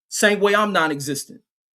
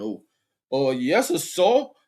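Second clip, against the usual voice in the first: mock toned-down, slow, meek, subservient tone. Mocking fans who tone down before the master: mock toned-down deference. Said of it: "they tone down".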